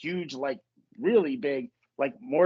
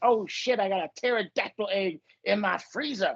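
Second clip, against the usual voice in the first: put-on bragging rich man voice, pitched higher; 5 semitones higher than usual. Retelling a comedy sketch about showing off a house: Dave Chappelle impression. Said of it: "And he's like".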